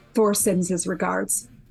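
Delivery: hushed, whispering voice. Speaking in character, up in her space: whispering. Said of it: "I'm just going to whisper".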